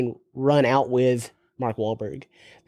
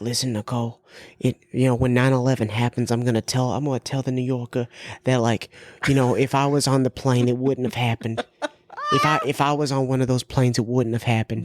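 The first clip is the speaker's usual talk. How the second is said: put-on Boston accent. Impersonating Mark Wahlberg talking to Nicole, Mark Wahlberg Boston accent impression. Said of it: "That Boston accent does come out".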